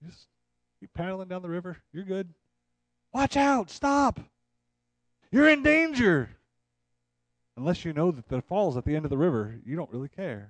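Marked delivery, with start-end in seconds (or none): 3.1-6.3 very high, drawn-out shouted yell. Picturing a drifter floating toward a waterfall, imitating someone yelling a warning. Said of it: "somebody yells at you".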